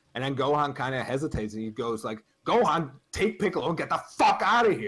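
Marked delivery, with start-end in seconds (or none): 2.4-4.8 mock heated, high, loud, furious yell, fully enraged. Retelling an anime scene where he orders gohan away: imitating an angry yell. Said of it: "he gets super heated".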